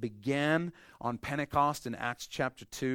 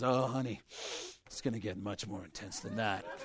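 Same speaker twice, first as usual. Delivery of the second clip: jaded, unimpressed, seen-it-all tone with zero sympathy; 4 semitones lower, 7 dB quieter than usual. Retelling what a nurse tells the couple in labor: imitating a jaded nurse. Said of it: "she's so jaded".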